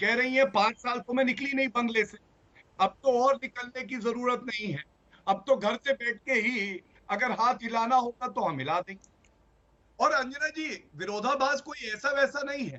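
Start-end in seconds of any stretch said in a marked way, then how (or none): none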